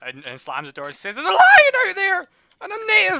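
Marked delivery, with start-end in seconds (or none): 1.2-3.2 terrified, shrill, very high, very loud panicked scream. Voicing a townsperson who opens the door and screams a warning: screaming in panic.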